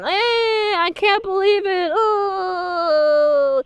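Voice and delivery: mock very slow, high, mopey moan, oh drawn out. Retelling a cartoon episode scene, imitating Ahsoka sounding sad. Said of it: "Ahsoka is all sad and".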